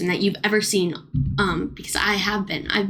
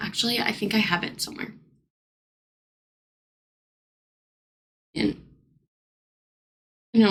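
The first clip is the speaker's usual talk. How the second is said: choked-up, tearing-up voice. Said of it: "I'm tearing up".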